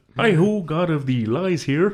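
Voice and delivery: high, felt puppet frog voice. Tabletop player introduces the god of lies in a Kermit the Frog voice. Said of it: "you do so much a better impression there".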